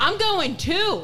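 shouting with excitement.

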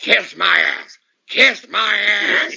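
very slow delivery, every word drawn out. Imitating Vince firing someone: Vince impression. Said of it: "I think he says".

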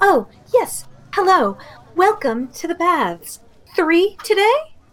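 small, high-pitched little creature voice. Voicing a small blue grung at a desk greeting visitors: voicing a small blue grung. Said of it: "a small blue grung with, uh, some tiny glasses on. She pushes her glasses up her nose, and she goes".

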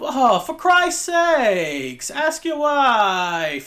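put-on mean, half-British accent. Describing a man who goes up to his room, doing his line: mean, half-british accent. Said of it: "He has like a mean accent, but then sometimes it's British".

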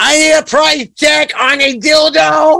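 put-on shrill, very high, loud yell. Retelling yelling into the phone at a Walmart checkout: imitating own yell. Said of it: "I just yell".

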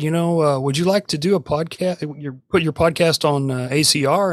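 ordinary delivery

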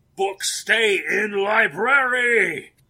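booming, very loud shrill shriek, "library" stretched out. A game narrator voicing a character at the library's broken door, screaming. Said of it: "And he screams".

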